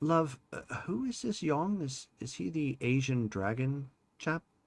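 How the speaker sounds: slow, hushed, intimate half-whisper. Playing Tom in a role-play, the player leans in and asks Charlotte, half-whispering. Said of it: "he whispers".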